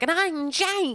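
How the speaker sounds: put-on very high, over-stretched children's presenter voice. Speaker contrasts an actor's flat delivery with children's TV, stretched Tweenies voice. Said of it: "really stretching their voices".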